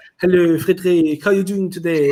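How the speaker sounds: high cartoon French accent. Recalling a French friend met in New Zealand, imitating Raquel's French accent. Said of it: "stereotypical English French way of speaking".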